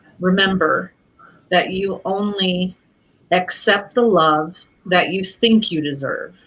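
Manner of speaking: slow delivery. Speaker shares advice for anyone it resonates with; said slowly. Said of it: "And so I have to say it slowly".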